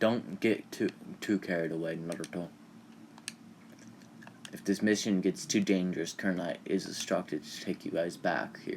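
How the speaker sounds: ordinary delivery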